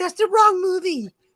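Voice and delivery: high, mock know-it-all tone. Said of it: "She's like".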